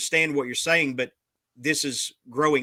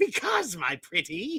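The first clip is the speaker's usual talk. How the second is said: put-on high storybook witch voice; 6 semitones higher, 3 dB quieter than usual. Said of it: "Why do you sound like a witch".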